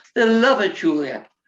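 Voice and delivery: put-on English accent. Retelling how the man backstage in a headset urged her on: imitating Nigel's English accent. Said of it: "he said it in an English accent".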